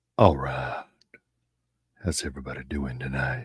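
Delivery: very deep, low, soft late-night radio announcer voice. Standing in for someone who stepped away, the speaker switches to a radio voice. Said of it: "let me use my radio voice".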